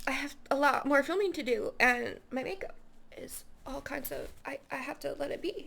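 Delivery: soft, choked-up, tearful voice. Speaker has to pause while filming, tearing up. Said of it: "I'm tearing up".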